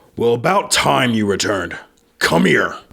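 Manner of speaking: calling-out voice, hailing from a distance. A game master voices a voice calling out to the players: booming voice. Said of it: "you hear this booming voice".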